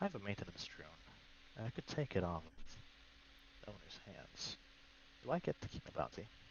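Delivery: whispered aside. A character in a game scene whispers to her about a maintenance drone, whispering. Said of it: "I whispered to her".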